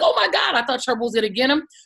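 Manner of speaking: mock, acted-out scream. Retelling when the dog went for the cat, acting out your own scream. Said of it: "was screaming like".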